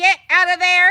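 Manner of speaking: shrill, very loud, full-volume mom voice. Calling out to someone to get out of there: mom voice. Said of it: "I had to use my mom voice".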